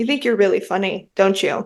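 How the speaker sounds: mock cold, flat, straight-faced delivery. Retelling what a blunt person said to them, quoting it mock-cold and straight-faced. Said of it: "Like just straight faced and like cold".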